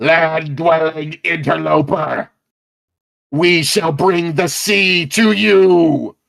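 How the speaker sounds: robotic, mechanical voice with "you" drawn out. Voicing a creature that was just hit, shouting out: mechanical shouting voice. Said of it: "shouts out with a mechanical voice".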